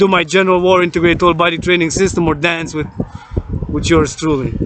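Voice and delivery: ordinary talk, nothing marked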